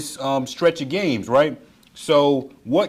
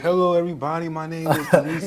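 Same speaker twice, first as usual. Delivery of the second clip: put-on tired, low-energy voice. Imitating the host's intro after hearing his voice: imitating Dalito's low-energy voice. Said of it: "I can hear your voice. You're like".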